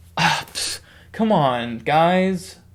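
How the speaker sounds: slow, mock sulky, snarky, dismissive scoff. Retelling a movie scene, imitating Ultron's snarky scoff. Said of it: "He goes like".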